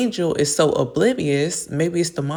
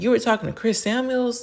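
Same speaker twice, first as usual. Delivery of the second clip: mock shocked, high-pitched scream; 6 semitones higher than usual. Retelling a reality show argument, imitating a cast member screaming. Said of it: "Wendy's over here screaming".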